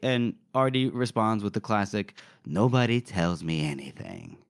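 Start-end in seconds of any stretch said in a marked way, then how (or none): 2.4-4.3 low, sultry voice. Quoting a book character's classic line: sultry Artie voice. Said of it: "in that exact sultry voice you just did".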